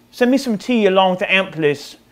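terrible, fake, put-on British English accent. Showcasing an amp built in England, the speaker adds a request in a horrible British accent. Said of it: "that's a horrible accent".

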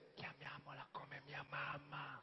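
very faint, weak, slow murmur. Husband recalls his wife's words about naming their daughter, imitating a faint voice. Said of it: "con un filo di voce".

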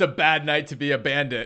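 very loud, high battle cry full of pure glee. Charging past the camp toward armed, hooded bandits, your character yells: gleeful yell. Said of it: "pure glee in my voice".

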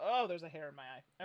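ordinary delivery

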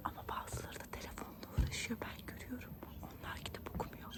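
whispered softly.

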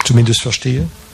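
plain

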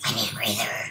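very low, brassy trombone-like voice. Demonstrating the voice trombone again, in a trombone voice. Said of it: "This is what the voice trombone sounds like".

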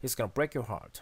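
break and heart stressed, linked in one breath. English lesson on sentence stress, stress on break and heart, one breath. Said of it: "이렇게 한 번의 호흡으로 break와 heart에 강세를 주면서 연결해서 읽어주면 되겠습니다".

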